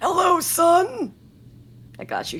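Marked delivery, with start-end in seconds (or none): 0.0-1.1 put-on high, elderly old-person voice. Playing the dear father in an improvised scene, greeting his son in an old person voice. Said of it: "Here's my old person voice coming out".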